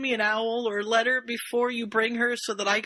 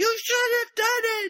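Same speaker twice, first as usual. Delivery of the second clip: mock angry, cross outburst, very high pitched; 12 semitones higher, 3 dB louder than usual. Retelling a scene from the book: imitating Harry getting mad. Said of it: "Harry gets all mad and says".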